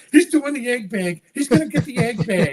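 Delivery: mock childlike excitement. Retelling waiting for the elevator with a friend: retelling giddy excitement. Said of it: "We were like two little kids jumping around".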